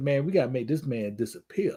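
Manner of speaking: hushed stage whisper, as if into an ear. Acting out half-whispering a joke plan into someone's ear: put-on half-whisper. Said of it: "if I had to whisper in his ear".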